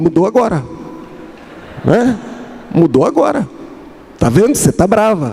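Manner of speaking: high, triumphant, insistent voice.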